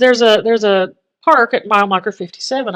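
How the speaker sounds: plain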